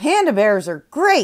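snickering. She walks around a tree while a parrot mimics her, snickering out loud. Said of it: "she snickered out loud".

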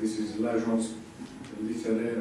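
ordinary delivery

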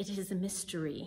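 put-on British accent. Quoting his seminary professor on a hard question: British accent. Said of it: "in his British accent".

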